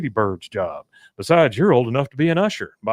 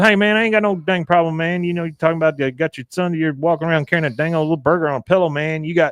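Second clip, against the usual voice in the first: pitched-up, offhand, dismissive character voice; 5 semitones higher than usual. Retelling a scene where Boomhauer answers Hank: imitating Boomhauer. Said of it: "He goes".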